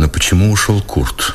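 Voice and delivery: ordinary delivery, nothing marked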